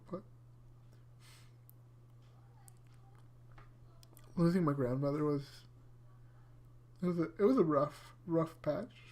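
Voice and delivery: welling with emotion, breathy, half-whispered. Speaking about losing a grandmother, getting emotional. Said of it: "I'm really sorry for getting emotional".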